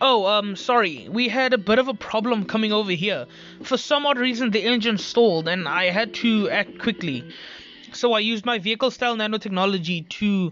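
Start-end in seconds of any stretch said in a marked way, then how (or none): none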